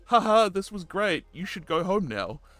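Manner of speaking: mock airy laughing-off tone, very high and breezy. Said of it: "she said it in such a way".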